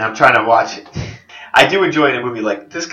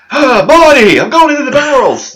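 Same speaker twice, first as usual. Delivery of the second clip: put-on eccentric scientist voice, higher and louder; 7 dB louder than usual. Joking about a movie scene: Doc Brown impression. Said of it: "That was my Doc Brown".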